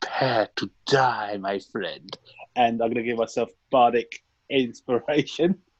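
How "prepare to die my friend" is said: whispering in a character voice. Whispering to himself in character before shooting at a creature: whispering. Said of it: "whisper to myself and say".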